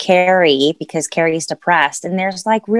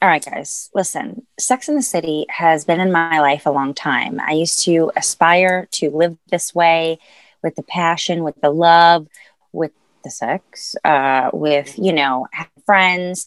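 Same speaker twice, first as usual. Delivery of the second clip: normal talking voice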